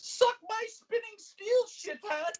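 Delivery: very high, slow, drawling British voice. Quoting a movie line when asked: Margaret Thatcher-like British voice. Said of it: "it's like your Margaret Thatcher version".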